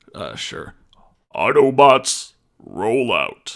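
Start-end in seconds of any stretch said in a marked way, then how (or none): 1.3-3.5 loud, rousing rallying call-out. Given a line to try, delivering it in an Optimus voice. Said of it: "give me a line. I'll try to".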